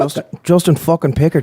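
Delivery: put-on Irish accent. Asked for an Irish accent, saying a guest's name: Irish accent. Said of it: "Give us an Irish".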